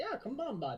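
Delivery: very high-pitched rural Canadian male voice. Describing talking while watching hockey: Letterkenny farmer voice. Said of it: "like the farmer guys that are like".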